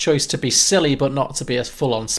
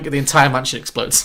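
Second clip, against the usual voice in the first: ordinary talk, nothing marked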